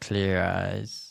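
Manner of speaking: put-on flat, monotone commercial announcer voice. Imitating the clear eyes commercial guy: imitating a monotone commercial voice. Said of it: "he was so monotone".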